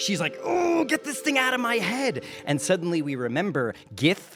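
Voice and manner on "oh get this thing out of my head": frantic, freaked-out, panicking, very high pitched. Voicing a Gith woman as the worms move in heads: freaking out. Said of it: "the Gith woman starts freaking out".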